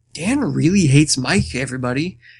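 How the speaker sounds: put-on whisper. Retelling what a woman whispered in her confessional, imitating a whisper. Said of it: "she was sitting there whispering, like".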